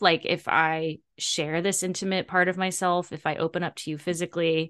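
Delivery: ordinary talk, nothing marked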